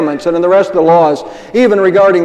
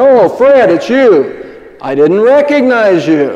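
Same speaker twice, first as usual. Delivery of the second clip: booming heavenly voice, higher pitch, slower pace; 3 semitones higher than usual. Telling a joke, answering a man knocking at heaven's door, booming voice of God. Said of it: "there's this booming voice that comes back from heaven".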